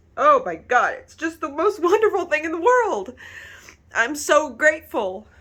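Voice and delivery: high, tearful crying with happy joy. Thanking the viewers who watch the speaker's videos, crying happy tears. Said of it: "These are happy tears".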